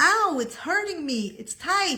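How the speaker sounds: high, yelping, pained put-on scream. Retelling what a person said while being zipped into a dress: imitating someone screaming in pain. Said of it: "Why are you screaming like that?".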